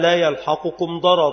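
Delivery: ordinary delivery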